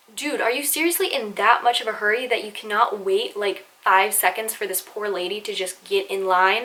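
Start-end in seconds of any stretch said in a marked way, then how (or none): none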